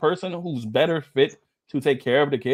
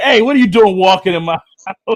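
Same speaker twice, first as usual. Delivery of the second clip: teasing, playful raised yell; 5 semitones higher, 11 dB louder than usual. Man showing how he'll greet his wife when she comes home, mock yelling. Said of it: "I'm gonna yell at my wife".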